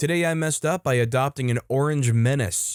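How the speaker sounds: normal talking voice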